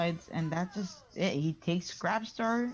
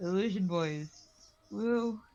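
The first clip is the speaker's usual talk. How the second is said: ordinary delivery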